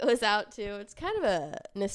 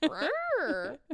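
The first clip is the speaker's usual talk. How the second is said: sassy, cheeky tone. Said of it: "Such a funny response".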